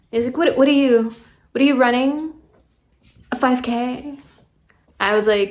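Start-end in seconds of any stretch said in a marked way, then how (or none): 0.3-4.1 put-on teasing, needling, smug mocking tone. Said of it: "he literally said it like this, with, like, a smirk on his face".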